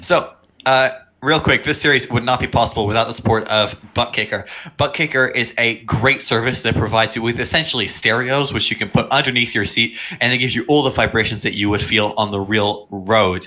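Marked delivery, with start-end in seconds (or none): none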